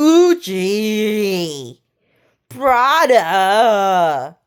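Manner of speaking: slow put-on Vietnamese accent. Explaining how Vietnamese people are expected to speak English, in a stereotyped Vietnamese English accent. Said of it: "I'm not really good at doing that accent".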